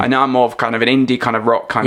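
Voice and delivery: ordinary talk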